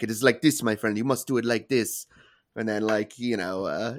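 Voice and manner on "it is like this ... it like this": put-on, imitated Arabic accent. Retelling how an old boss showed him how to sweep: imitating Basil. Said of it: "He's like".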